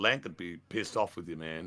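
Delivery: ordinary talk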